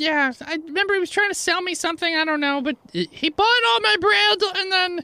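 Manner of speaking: tiny gnome baker voice, very high pitched. Voicing the gnome baker answering a player's question: gnome baker character voice. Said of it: "So you go in there and you see a gnome with a makeshift cast on one foot. / So you go in there and you see a gnome with a makeshift cast on one foot. Has obviously been crying all day. Little red scra".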